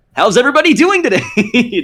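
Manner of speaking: very high, bouncy, excited voice. Showing how they sound greeting people at work: Sonic voice, way up and excited. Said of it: "just like way up and excited".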